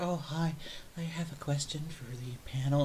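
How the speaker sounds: soft, very slow, timid, scared hush. Imitating a conference attendee asking the panel a question: imitating low, scared-sounding talk. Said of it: "they talk real low, like they're scared".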